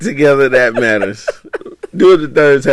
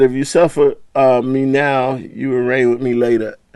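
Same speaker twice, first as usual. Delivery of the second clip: plain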